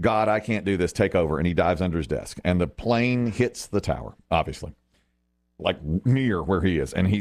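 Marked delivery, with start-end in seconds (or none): none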